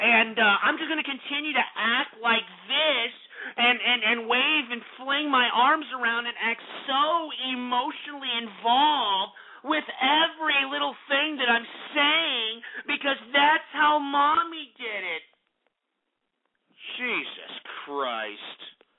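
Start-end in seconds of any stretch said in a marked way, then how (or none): 0.0-15.0 mocking, animated, over-feminine impression, higher pitch. Mocking bronies who copy their mothers: mocking over-feminine animated voice. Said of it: "I gotta talk like this like mommy".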